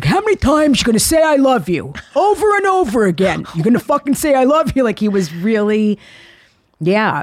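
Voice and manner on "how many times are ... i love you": put-on Brooklyn accent, fast, rattling, pitched-up. Retelling what a dying father said back: imitating Dad's Brooklyn accent. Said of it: "in a Brooklyn accent".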